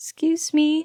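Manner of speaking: fake, very high, put-on girlish calling voice. Narrator in a dark parking lot calling out to a man, put-on girly voice. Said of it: "I call out in a girliest tone as I can muster".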